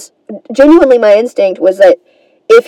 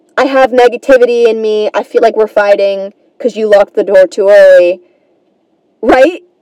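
plain

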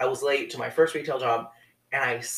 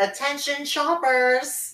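very high, nasal announcer voice; 13 semitones higher than usual. Recalling overhead-speaker announcements to shoppers, in a really high-pitched nasal voice. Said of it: "I would talk in a really high-pitched nasally voice".

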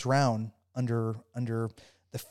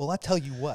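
put-on thick, heavy country rural accent; 2 semitones higher than usual. Recounting being questioned about pressure, the speaker quotes the woman: imitating a thick country accent. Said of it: "she has this very thick country accent".

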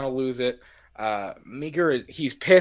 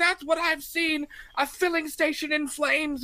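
put-on character outburst, voice much higher in pitch. Describing a favourite scene where the character snaps, imitating Loomis losing it. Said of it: "he just completely loses it".

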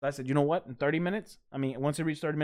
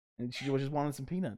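ordinary delivery

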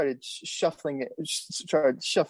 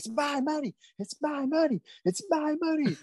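screeching, very high-pitched, shrill screaming; 12 semitones higher than usual. Retelling a woman who took money from the tip jar, imitating her screaming. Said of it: "started screaming".

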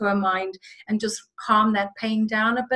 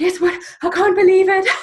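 put-on very high, loud, breathless gushing; 9 semitones higher, 8 dB louder than usual. Retelling a phone call she made: imitating someone out of breath. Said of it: "Completely out of breath".

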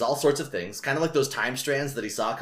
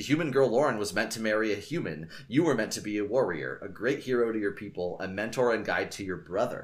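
ordinary delivery

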